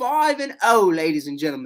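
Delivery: light, slight put-on British accent. A host talking to listeners about the standings, in a little British accent. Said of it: "My little British accent".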